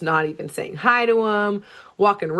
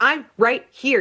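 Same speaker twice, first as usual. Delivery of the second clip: snapping, frustrated, fed-up high yell; 5 semitones higher than usual. Retelling a scene where he, ignored by them, snaps at them, imitating someone yelling. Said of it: "starts like yelling at them".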